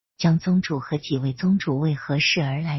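ordinary delivery

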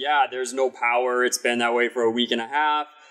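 normal talking voice

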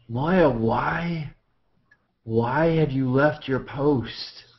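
rasping whisper. Narrator voicing a man addressing Moya, in a hoarse whisper. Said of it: "in kind of a hoarse whisper".

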